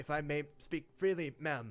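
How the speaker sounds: nervous, anxious voice. A game master voices the cloaked ranger addressing a player's character, nervous ranger voice. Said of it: "The cloaked ranger kind of nervously".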